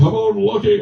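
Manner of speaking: high, loud yell. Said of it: "And, and Margaret yelling".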